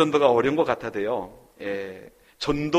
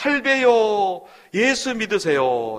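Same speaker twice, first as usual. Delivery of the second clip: mock schoolboy voice, high child's shouting call; 7 semitones higher than usual. Retelling how a schoolboy shouted at an old man's house before school: retelling a child's shout. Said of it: "외쳤습니다".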